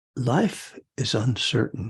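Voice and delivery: slow, very nice, soothing woman's ad voiceover voice. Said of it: "this very nice, soothing woman's voice says".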